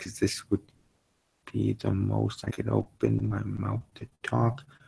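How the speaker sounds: quiet, slow mumble with barely opened mouth. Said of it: "very quiet and slow paced and talking like this".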